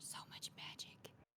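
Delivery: hushed, breathy, in-character whisper. Reacting in character to a glowing magical place, whispering. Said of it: "I'm just gonna whisper".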